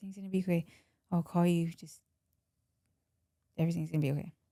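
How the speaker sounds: soft, hushed stage half-whisper. Retelling hugging a crying daughter during an arrest: retelling a half-whisper. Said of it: "I just whisper in her ear".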